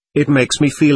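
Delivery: ordinary delivery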